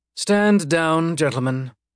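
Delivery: nearly indifferent, casual, almost bored. A well-dressed executive tells armed guards to stand down, in an almost bored tone. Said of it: "in an almost bored tone".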